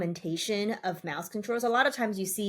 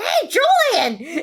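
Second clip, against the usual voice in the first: high, loud, straight-up yell projected far; 10 semitones higher, 11 dB louder than usual. Speaker imagines yelling out a name as if into a megaphone: retelling a yell. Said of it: "you can just straight up yell out like".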